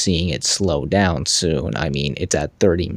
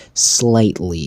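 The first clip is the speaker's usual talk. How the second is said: "slightly" stressed, drawn out and slow. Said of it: "I cannot put any more emphasis on that word".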